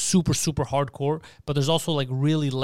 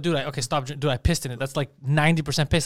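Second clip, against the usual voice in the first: usual speaking voice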